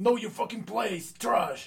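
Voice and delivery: badly done put-on voice, very high and loud. Recalling a guy in a pink suit, doing his voice: bad Filthy Frank voice. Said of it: "do this kind of voice".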